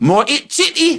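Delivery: put-on very high, excited, eager Geordie accent. Retelling a man's answer on the phone, imitating an excited Geordie accent. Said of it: "he said it in a Geordie accent with such excitement, enthusiasm, and it sounded like this".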